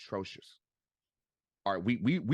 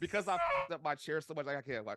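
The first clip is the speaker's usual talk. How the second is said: usual speaking voice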